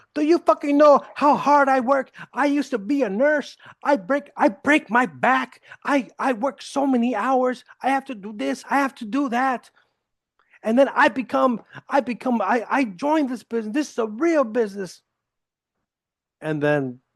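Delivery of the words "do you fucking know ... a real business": mock furious, pissed-off, high angry tirade. Retelling a question's angry reply: imitating an angry woman. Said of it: "she got all pissed off".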